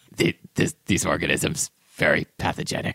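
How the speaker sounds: low, growling monster voice. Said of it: "would you say that in Cookie Monster's voice".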